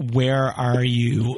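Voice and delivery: voice cracks and breaks. Putting a direct question to someone, voice cracking. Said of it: "My voice cracked there".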